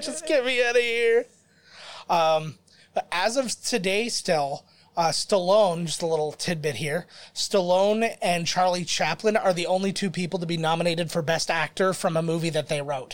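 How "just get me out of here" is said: sobbing, tearful, high-pitched crying whine. Picturing a guy who wants to leave: imitating someone crying. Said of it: "he's crying with".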